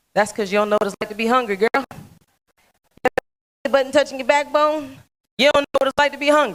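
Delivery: put-on down-home country voice, loud and fast. The speaker recalls what a man told her thirty years ago, in his country voice. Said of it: "in his country voice".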